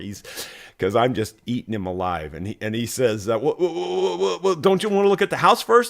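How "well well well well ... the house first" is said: put-on stammer, higher pitch. Retelling how a flustered seller answered a pushy buyer: imitating someone stuttering. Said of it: "he starts stuttering".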